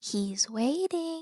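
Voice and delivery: put-on whispering like a child. Game master narrating a voice all the players hear, a child's whisper. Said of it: "you all hear a child whisper".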